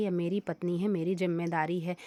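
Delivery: ordinary delivery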